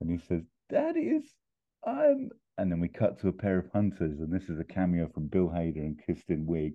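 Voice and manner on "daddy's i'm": very high, thin, squeaky voice in pain. Retelling a film scene, voicing a hurt character getting up: imitating a pain-squeaking voice. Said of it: "his voice squeaking with pain".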